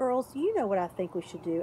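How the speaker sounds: ordinary delivery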